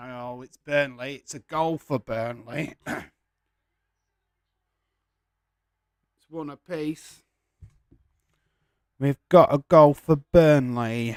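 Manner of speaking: slow speech, voice cracking with excitement. Calling a goal for Burnley live: voice cracking with excitement. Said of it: "With my voice cracking like mad".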